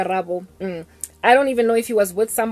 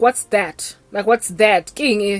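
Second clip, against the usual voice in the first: put-on angry man's voice with attitude. Retelling how a man at a meeting questioned a ring: imitating an angry man with attitude. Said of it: "with so much attitude and so much anger".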